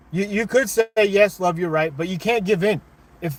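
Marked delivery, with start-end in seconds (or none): none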